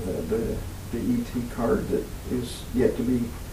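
voice dropping, quiet.

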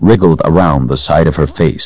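ordinary delivery, nothing marked

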